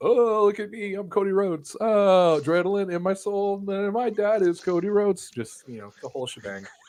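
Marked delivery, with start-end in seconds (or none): 0.0-5.3 mocking, pitched-up show-off voice. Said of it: "Cody comes out and he's like".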